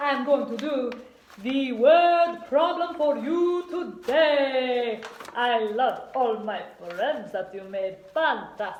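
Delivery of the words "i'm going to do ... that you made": loud, odd put-on accent kept up throughout. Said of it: "I don't know what accent this is".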